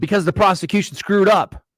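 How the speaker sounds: outburst of yelling. Answering a chat question about the dropped death penalty: yelling. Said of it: "I'm not yelling at you".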